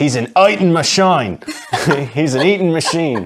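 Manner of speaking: put-on Australian accent. Showing off accents after a trip to Outback Steakhouse, in an Australian accent. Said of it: "killer Australian accent".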